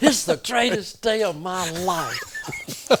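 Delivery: acted loud exclamation. Retelling a turkey hunt, quoting a hunter surrounded by turkeys: retelling a loud exclamation. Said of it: "and in loud voice".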